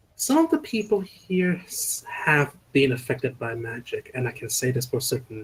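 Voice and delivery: hushed half-whisper, kept quiet and private. Speaker's character half-whispers a report to another character, low half-whisper. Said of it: "lower my voice by quite a lot and just whisper".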